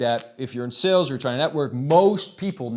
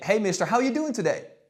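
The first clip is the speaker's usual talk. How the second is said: rapport-seeking, pitched-up lilt ending upward; 6 semitones higher than usual. A little kid greeting a teacher in authority: rapport-seeking tone. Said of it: "That's seeking rapport, ... you're going to naturally speak like this to them".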